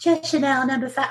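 bad mock high, cooing, purring film star voice. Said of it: "terrible Marilyn Monroe impression".

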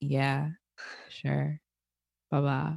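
slow, sad, dejected, low-spirited voice. A speaker shows how people sound when feeling down, sad, depressed voice. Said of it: "When you have a sad voice or a depressed voice".

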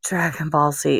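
put-on worn-out voice. Retelling how both answered at once in the same voice: retelling an exhausted answer. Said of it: "We were just exhausted".

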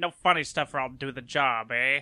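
put-on 1970s old-time mobster voice. Quoting a man's only known line, in an old-time mobster voice. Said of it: "Very, very like a mobster".

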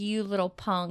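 usual speaking voice

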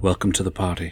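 hushed, soft, private half-whisper. Voicing a character who half-whispers back to a voice: half-whispering. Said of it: "just kinda whispers to himself".

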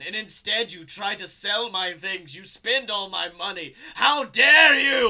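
very loud, all-out scream at full volume. A character who faked his death confronts the one selling his things, screaming. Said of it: "And as he screams".

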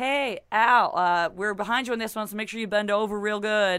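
casual, laid-on put-on American accent. Retelling what he said on set in front of everyone: american accent. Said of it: "The American accent there was very".

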